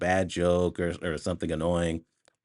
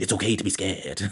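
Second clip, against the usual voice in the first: rapid mumble through barely moving lips. Imitating how Robert Downey Jr. talks in the movie: fast, mouth barely moving. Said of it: "he talks really fast, and he talks in a way where his mouth doesn't really move".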